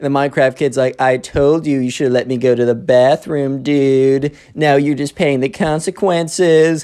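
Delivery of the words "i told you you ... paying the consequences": put-on smug voice, much slower pace. Retelling a classroom scene, answering the teacher: imitating the Minecraft Kid, smug. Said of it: "feeling all full of himself".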